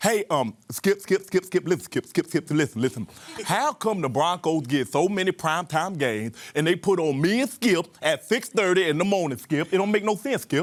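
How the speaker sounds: exasperated, insistent sports-pundit voice, pressing and repetitive. Asking a press conference question as Shannon Sharpe: Shannon Sharpe impression. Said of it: "Jay Pharoah to do impressions".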